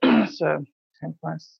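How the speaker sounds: very low, indistinct mumble under the breath. Retelling her answer in the car on the way to an event, imitating her mumble. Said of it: "she like kind of mumbles like".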